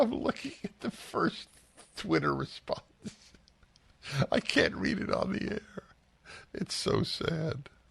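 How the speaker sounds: very high voice, giggling through the words. Speaking on air while looking at a twitter response, laughing while talking. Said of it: "I'm laughing".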